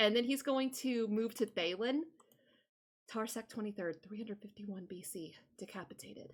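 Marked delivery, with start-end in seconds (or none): 3.1-6.3 very quiet, hushed, much slower. Voicing a character as he moves from one person to the next, very quiet voice. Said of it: "in a very quiet voice, he says".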